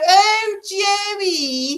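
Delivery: put-on Liverpool accent. Recalling a sitcom character's catchphrase, in a Liverpool accent from Bread. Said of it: "That was my Liverpool".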